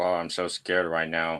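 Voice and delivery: dry, flat, deadpan sarcastic monotone. Reacting to a complaint about jump scares: sarcastic flat tone. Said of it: "Can't you see by the tone of my voice?".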